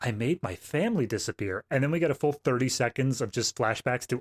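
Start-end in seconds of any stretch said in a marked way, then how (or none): 0.0-1.6 mock mournful, grave, sad, solemn delivery. Retelling a movie scene, quoting the boy's line, mock sad and solemn. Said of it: "sad and solemnly, he's like".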